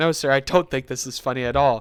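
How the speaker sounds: normal talking voice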